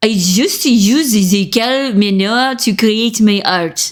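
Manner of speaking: slow, bad put-on German accent drifting French. Trying a german accent for the first time, a bad german accent. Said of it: "I'm gonna try to try to do a German accent".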